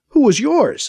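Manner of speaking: spat-out, spitting tone. A narrator reads BC answering Anita's question, spitting back. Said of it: "BC spits back at her".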